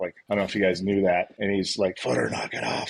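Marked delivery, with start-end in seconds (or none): 2.0-2.9 strained rasp, barely able to speak. Quoting a scary man with a throat injury telling the speaker off, imitating a raspy voice. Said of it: "he talked with that like raspy voice".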